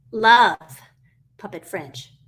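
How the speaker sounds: puppet voice with stress on "love".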